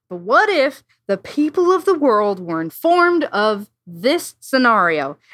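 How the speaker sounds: man's voice. Reading out a man's question in his voice: imitating his voice. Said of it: "I'll try to read this in his voice".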